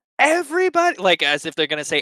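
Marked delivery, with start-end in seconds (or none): 0.2-1.0 first word of a yell, very high and loud. Voicing a panicked person who gasps and starts to yell. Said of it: "take a big breath".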